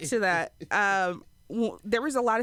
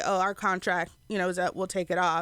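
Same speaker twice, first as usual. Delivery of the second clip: ordinary talk, nothing marked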